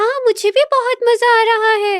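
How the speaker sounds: put-on very high little-girl voice. Demonstrating different voices on a podcast, a young girl's voice. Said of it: "यंग child voice female".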